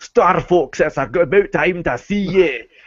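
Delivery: high-pitched, large Scottish voice. Imitating Andros yelling at Star Fox at the game's end: Andros's big, loud Scottish voice. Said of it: "yells at you in a big, loud Scottish voice".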